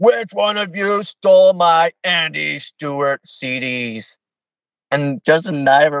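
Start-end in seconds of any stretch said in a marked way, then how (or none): 0.0-4.2 put-on mean old man voice, slow, pitched up, "CDs" stretched. Retelling how an old man stood up and accused them, imitating him getting mean. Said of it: "he gets kind of mean".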